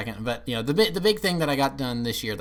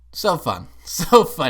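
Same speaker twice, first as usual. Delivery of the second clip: sarcastic, louder and much slower; 5 semitones higher, 8 dB louder than usual. Speaker recapping his year, sarcastic. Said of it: "he said sarcastically".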